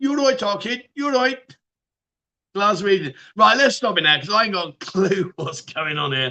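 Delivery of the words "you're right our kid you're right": put-on Birmingham accent, high pitched. Running through regional accents: put-on Birmingham accent.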